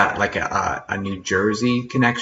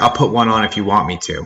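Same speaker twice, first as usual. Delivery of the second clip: mock sarcastic tone; 4 dB louder than usual. Relaying his answer to whether he wears a cowboy hat: imitating a sarcastic reply. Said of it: "He's so sarcastic, he's like".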